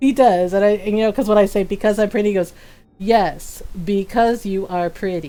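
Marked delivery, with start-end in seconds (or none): 3.0-5.3 flat, dead-level, low, slow deadpan monotone. Retelling her husband's reply when she says she's pretty; imitating Ron's monotone. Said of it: "in the most monotone voice he can".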